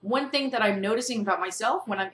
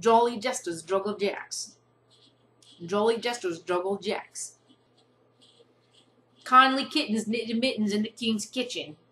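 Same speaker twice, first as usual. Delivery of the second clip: put-on New York accent. Trying the same tongue twisters again, now in an imitated New York accent. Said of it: "here is my attempt to do the same tongue twisters with this New York accent".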